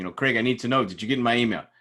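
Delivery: a little frantic, anxious, rushed, urgent delivery. Recounting what a man said when he came up to him, mimicking a little more frantic. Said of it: "a little more frantic".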